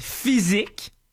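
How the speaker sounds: heavy stress on "physique". Reading a dictionary definition of sport aloud to the others, stressing the word physique. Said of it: "je mets un accent sur le mot physique".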